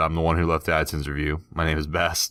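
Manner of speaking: ordinary delivery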